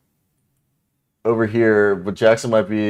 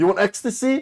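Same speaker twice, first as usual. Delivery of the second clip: put-on Eastern European accent. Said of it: "You look like you're from Prague".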